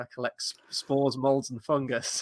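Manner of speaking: put-on dry, flat, expressionless deadpan delivery. Quoting a film character's answer to the receptionist, imitating a deadpan delivery. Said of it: "It's just so deadpan".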